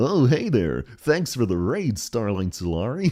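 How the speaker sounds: blended cartoon dog and cartoon frog voice. Thanking a raider for the raid, the speaker slips into a Goofy-Kermit mix voice. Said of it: "that was a mix of Goofy and Kermit".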